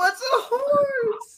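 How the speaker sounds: acted very high sobbing, "horse" drawn out.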